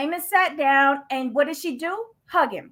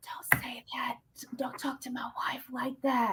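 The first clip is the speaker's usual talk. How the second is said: mocking meek voice, quieter; 12 dB quieter than usual. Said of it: "he said it in such a meek voice".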